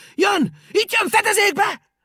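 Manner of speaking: piercing, sharp, very high, very loud cry. After looking up, a character calls to the others, shouting in a sharp voice. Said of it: "éles hangon rikkantott".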